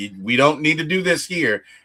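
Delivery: ordinary delivery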